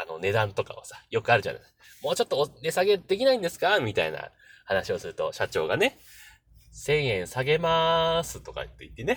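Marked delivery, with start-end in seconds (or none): 6.7-8.4 very flat, wooden monotone, as if read off card. Quoting the company president during a price negotiation: very flat, stilted reading. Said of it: "すごい棒読みで".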